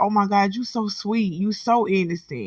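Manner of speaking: mock amused, laughter mixed into the words. Retelling what a laughing coworker said: imitating him laughing while talking. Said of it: "And he started laughing".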